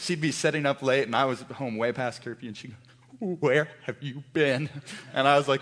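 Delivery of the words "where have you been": mock shaky voice, lower pitch. Recalling coming home past curfew, the speaker imitates the mother's shaky voice. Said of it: "she would just get this shaky voice".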